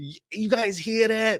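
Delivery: put-on high, slow New York accent. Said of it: "I don't know why he's got a New York".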